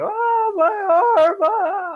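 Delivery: high, shrill, long, drawn-out wail of agony. Narrating a Dungeons and Dragons fight, voicing a man going down: screaming in pain. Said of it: "he goes down to the ground screaming".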